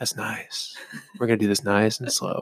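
hushed, breathy, close whisper. Speaker tells listeners he will stop yelling and come close: talking quietly in your ear. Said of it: "now I'm going to talk all quiet and I'm going to get up in your ear".

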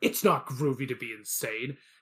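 mock defensive, combative, loud and aggressive pushback. Retelling a movie exchange: imitating Martin Short, defensive and aggressive. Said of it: "gets really defensive and aggressive and goes".

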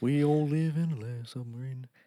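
put-on Liverpool accent. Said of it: "doing his [name] impression".

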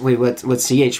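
plain

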